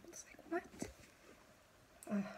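soft, breathy, tearful, upset groaning. Recounting what he said about her symptoms, getting upset. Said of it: "I guess I'm getting so upset, my nose is running".

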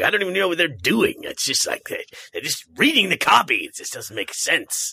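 classic swooping, smoky, whiskey-voiced announcer voice. Speaker quotes an older classic announcer dude: smoky whiskey announcer voice. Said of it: "smoky whiskey voice".

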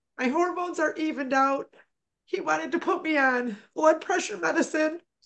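speaking through tears. The speaker, recounting a doctor's advice, apologizes for crying; crying. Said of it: "I'm sorry I'm crying".

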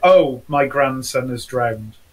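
put-on flat deadpan voice. Recounting a woman's 911 call shown on tv, imitating her completely deadpan. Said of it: "this lady was completely deadpan".

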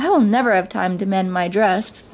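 usual speaking voice

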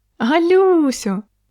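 very high, laughing shout. A woman looks straight at the narrator and calls out: shouting across the hall, laughing. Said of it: "закричала вона на весь гол і засміялася".

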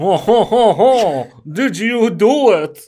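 worst put-on French accent, very loud and high. Playing the detective in an improvised scene, worst French accent. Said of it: "put on your worst French accent".

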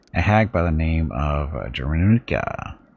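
plain

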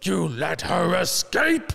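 very slow, swooping, loud, rough accusing yell. Retelling a scene where the Nome King yells at Mombi, Nome King yelling. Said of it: "And he's yelling at Mombi".

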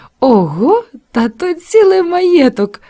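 delighted, admiring, drawn out and rising. Martha reacts to the girl's news about her weekly shilling, with delight. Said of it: "захоплено вимовила Марта".

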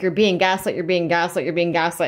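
ordinary delivery

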